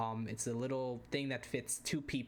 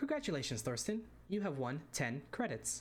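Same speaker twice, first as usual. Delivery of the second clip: sing-song automated woman's announcer voice; 4 semitones higher than usual. Retelling winning a game prize as the machine announces it, automated woman's voice. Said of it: "you hear the the the automated woman go".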